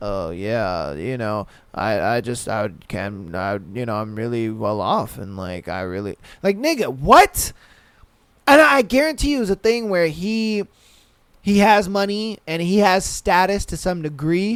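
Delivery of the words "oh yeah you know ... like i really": low, halting, stammering, stop-start rambling talk. Retelling how a man on a show talked: imitating his halting, rambling talk. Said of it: "And then he talks like this".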